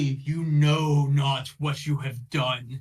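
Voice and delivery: slow, drawn-out, deliberate proclamation in possessed voice. Voicing a voice that takes over a fleeing figure: said really loudly. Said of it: "just really loudly".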